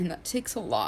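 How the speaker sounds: high, tearful crying speech with long pauses. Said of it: "I'm crying".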